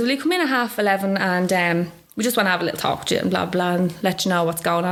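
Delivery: ordinary talk, nothing marked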